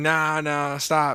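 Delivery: put-on small, mild, frantic, urgent shout. Retelling a joke where the hotel manager runs out: imitating a screaming hotel manager.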